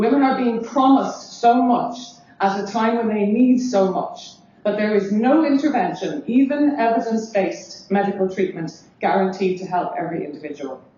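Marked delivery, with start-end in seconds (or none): 0.0-4.3 emotional, moved voice, catching and choking up. Speaker addresses fellow teachers, getting emotional. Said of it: "I'm getting emotional saying this".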